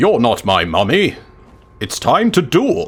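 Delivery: voice like an anime character. A player deliberately repeats his own line, in a Yami Yugi voice. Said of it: "Why did I say that like Yugi?".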